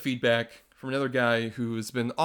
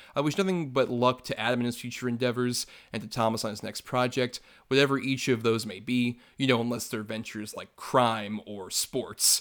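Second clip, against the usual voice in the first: ordinary talk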